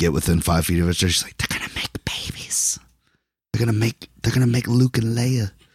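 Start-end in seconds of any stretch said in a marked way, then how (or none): 1.4-5.5 hushed, secretive stage whisper. Retelling what a date kept saying during the movie: imitating a whisper. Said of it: "the girl kept whispering".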